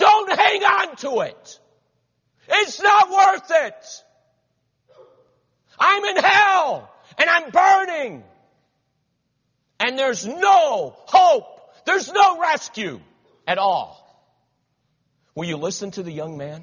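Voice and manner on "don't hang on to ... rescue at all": very high, very loud anguished wail of despair. Addressing listeners, acting out a young man in hell crying out. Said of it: "he's crying out".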